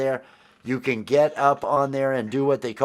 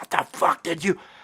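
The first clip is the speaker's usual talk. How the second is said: put-on, held-in screaming outburst; 4 semitones higher than usual. Retelling how the senior chief reacted at the typewriter: imitating someone screaming. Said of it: "He screams".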